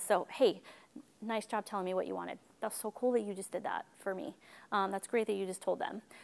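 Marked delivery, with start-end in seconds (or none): 1.2-4.3 soft, lowered, toned-down, low-key voice. Praising a kid for saying what they wanted, lowered, toned-down voice. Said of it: "So I lower my voice a little bit".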